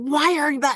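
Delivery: tense, exasperated tone. Speaker retells a tense moment with him glazing over: acting out own frustration. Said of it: "And I'm frustrated".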